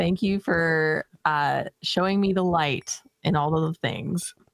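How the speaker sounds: usual speaking voice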